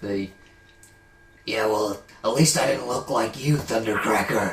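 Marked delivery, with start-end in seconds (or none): 1.5-4.5 gruff, low voice. Asked to do a Skywarp voice, imitating the character: gruff Skywarp voice. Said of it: "gruff one he has in, uh, in War for Cybertron".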